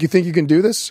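normal talking voice

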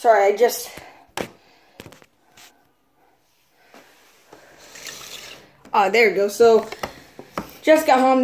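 out of breath. Having just got home, the speaker starts unboxing a remote, out of breath. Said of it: "That's why I'm out of breath".

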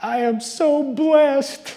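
put-on sobbing, very high, very drawn out. Retelling a movie scene where a woman in tears says it: imitating crying. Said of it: "crying and saying".

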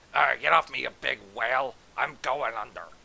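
gurgled words. A robber floundering in a lake among other men; gurgling. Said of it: "One of the robbers gurgled".

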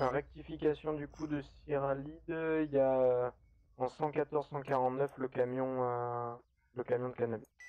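loud police-radio style delivery.

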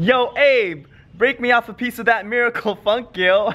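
very high, bro dialect voice. Actor trying out an awkward line they say in the show, bro dialect. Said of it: "this bro-elect that I have to do".

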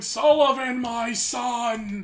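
put-on wrestling-promo style high yell, word "son" drawn out. Retelling how a man at an airport called out for sullivan: imitating someone yelling. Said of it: "this dude's literally yelling".

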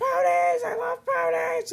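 mock very high, raspy, shrill swooping scream. Retelling a video of a girl on a roller coaster: imitating a girl yelling. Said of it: "she just starts yelling".

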